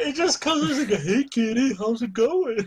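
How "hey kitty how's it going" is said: slow, drawn-out talking-dog character voice. Quoting the dog character from the show: dog from Up voice. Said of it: "the dog just sounds like the dog from Up".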